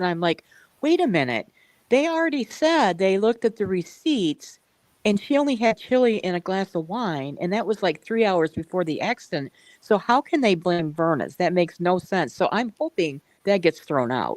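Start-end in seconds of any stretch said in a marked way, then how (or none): none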